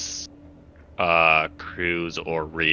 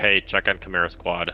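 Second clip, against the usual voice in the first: plain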